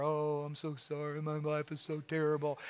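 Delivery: soft, slow, mopey drawl, sad and overly emotional. Describing the sad boy who walks around moping, mock-mopey Eeyore sadness. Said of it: "become the sad boy and just get really emotional and walk around like Eeyore".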